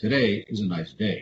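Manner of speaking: down inflection, pitch dropping on day. Explaining vocal inflection, saying the sentence with falling inflection. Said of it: "That's down inflection".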